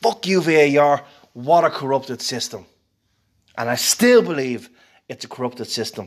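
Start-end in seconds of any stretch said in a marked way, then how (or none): 0.0-2.7 put-on, restrained mild yell. Retelling a reaction to a referee decision: imitating screaming at the TV. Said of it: "I was screaming at the T V".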